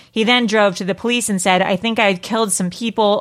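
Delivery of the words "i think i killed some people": plain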